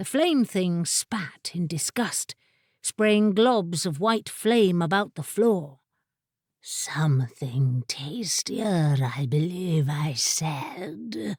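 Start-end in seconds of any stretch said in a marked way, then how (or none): 6.6-11.4 low, held-back, smouldering fiery rumble, crackling. Narrator voicing a creature of living flame answering the wizard, suppressed fiery tumult, crackling. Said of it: "and a thing of living flame wandered in, / and the bursts of fire wreathing its slender body, tapering tail, and three scaly legs dimmed a little. / uttered with the suppressed tumult of a forest fire".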